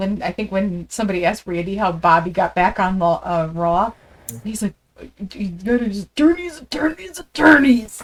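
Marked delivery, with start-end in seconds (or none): 5.3-8.0 half-hearted, weak wrestler voice, slightly higher pitch. Quoting a commentary line about how Bobby got back on Raw: Randy Savage voice. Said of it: "Can't do the voice".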